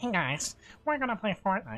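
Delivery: dorky, put-on nerd voice. Recalling another of their silly voices, in a nerd voice. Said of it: "I had another nerd voice".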